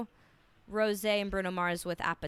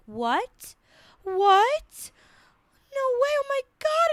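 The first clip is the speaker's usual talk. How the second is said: shrill, booming, swooping shock, what stretched; 8 dB louder than usual. Retelling a viral interview reaction, imitating someone overwhelmed with mock disbelief. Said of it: "she's just like".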